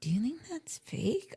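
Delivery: put-on whisper under breath. Retelling a quiet remark to a companion at a checkout: imitating whispering under breath. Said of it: "under my breath saying to Chris".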